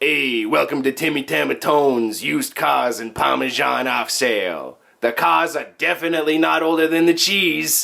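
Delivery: put-on raspy Italian accent with swaggering salesman manner. Hosts improvising a used-car ad on air, raspy Italian accent. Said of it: "get my Italian swag on".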